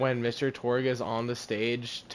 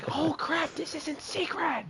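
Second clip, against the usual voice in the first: shrill, very high scream-whisper. Retelling Torg's interview scene: Torg's scream-whisper. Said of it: "he starts scream whispering".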